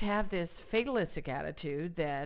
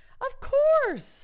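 lilting, happy, expectant sing-song; 9 dB louder than usual. Showing how to say a trigger phrase: lilting, expectant voice. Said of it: "you want a lilt in your voice with expectation of the good things coming".

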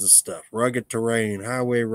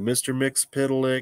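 ordinary delivery

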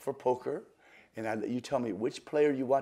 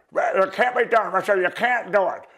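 very loud, high put-on voice, belted out; 8 semitones higher, 11 dB louder than usual. Retelling what Professor Vernon says, done in a Professor Vernon voice. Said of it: "you want me to do it in my Vernon voice?".

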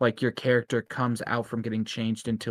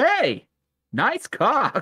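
very high, loud, shrill, swooping, sing-song cartoon hero voice; 13 semitones higher, 5 dB louder than usual. Reading a line from a card aloud: Shadow the Hedgehog voice. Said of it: "is it Shadow the Hedgehog's voice?".

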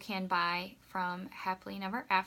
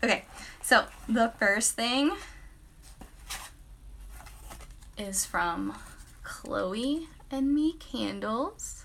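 slightly jittery, a little nervous, slow; 3 semitones higher, 3 dB louder than usual. Starting an unboxing video live for the first time: a little nervous. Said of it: "I'm kind of nervous going live".

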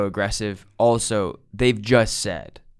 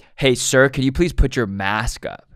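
put-on aggressive tone, higher pitch; 2 semitones higher than usual. Speaker retells a man in line telling him to mask up: imitating an aggressive demand. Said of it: "I think he realized how aggressive he came off".

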